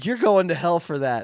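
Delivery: high, loud, retorting voice. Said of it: "He was like".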